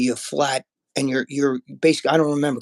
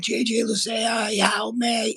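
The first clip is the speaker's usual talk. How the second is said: mock, high, slow, very drawn-out screaming cry; 8 semitones higher than usual. Retelling calling for his girlfriend and daughter while coming out of anesthesia: imitating own past screaming. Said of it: "And I'm screaming".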